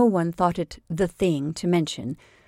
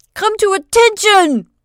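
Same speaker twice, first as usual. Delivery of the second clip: very high, shrill, attempted thundering voice; 13 semitones higher, 8 dB louder than usual. Benjamin orders the sentry to attention, trying to thunder a command. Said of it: "he tried to thunder".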